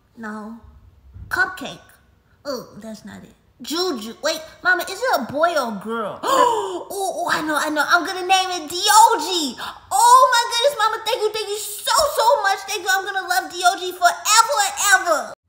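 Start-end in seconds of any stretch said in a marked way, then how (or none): 9.9-15.3 overexcited, much louder, faster, higher. Thanking Mama for her surprise, overexcited. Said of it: "calm down".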